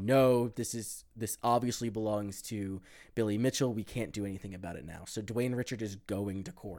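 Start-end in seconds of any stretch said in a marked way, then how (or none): none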